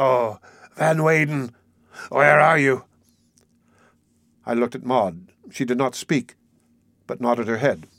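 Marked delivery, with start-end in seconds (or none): 0.0-2.8 slow, hoarse, husky voice with a note of fright. Narrator voices a man calling out to his companion: hoarse and frightened. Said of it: "with a note of fright in his voice".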